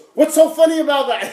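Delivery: mock mad, very high, very loud, shrill shout. Retelling how a furious friend snapped back: imitating an angry retort. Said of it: "He was so mad at me".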